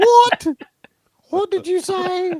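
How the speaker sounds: very high, very loud, very slow fake British accent. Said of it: "she just completely talks in a British accent".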